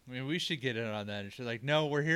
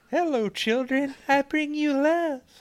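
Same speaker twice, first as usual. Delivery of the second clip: shrill, very high-pitched and loud voice; 14 semitones higher, 10 dB louder than usual. Acting out a dream visitor who shows up Thursday nights, in a high-pitched Urkel-like voice. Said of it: "he had a high-pitched voice, like Urkel".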